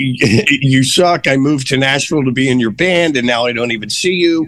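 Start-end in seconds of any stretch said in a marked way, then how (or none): none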